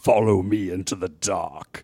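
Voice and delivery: deep, low voice, close to the ear. Describing a scene, the speaker voices someone right behind the listener's ear, deep voice. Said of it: "a deep voice just right behind your left ear that says".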